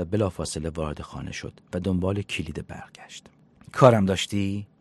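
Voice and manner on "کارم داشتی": very loud voice with an unwelcoming edge. The host speaks to a visitor who just walked in, in a get-out-of-my-house tone. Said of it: "با لحن از خونه من گمشو بیرون".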